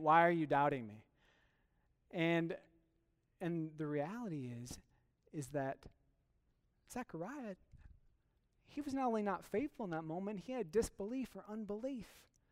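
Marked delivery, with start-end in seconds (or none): 0.0-1.0 low, dry, matter-of-fact deadpan. Speaker acting out a reply from one sent by God to a doubter: mock deadpan delivery. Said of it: "Just sort of this deadpan".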